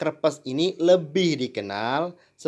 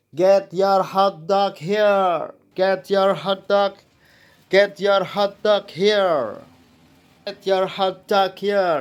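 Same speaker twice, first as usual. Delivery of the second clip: play-acted vendor's shout, loud and high; 5 semitones higher, 5 dB louder than usual. Retelling how sellers at the games always called out: imitating a vendor shouting. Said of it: "penjualnya selalu berteriak".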